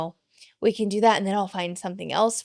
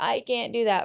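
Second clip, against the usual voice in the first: put-on whiny, complaining child's voice; 3 semitones higher, 3 dB quieter than usual. Quoting a kid who refuses to do something: imitating a whining child. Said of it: "our kid is whining".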